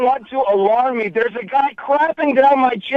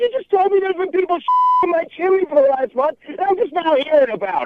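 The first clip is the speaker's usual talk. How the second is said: openly upset, disbelieving, pitched-up voice; 5 semitones higher than usual. A man on a phone call, just told people were in his chimney, upset. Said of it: "And I am upset".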